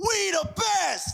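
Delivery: high, rough hollering hype-man shout. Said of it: "all these catchphrases".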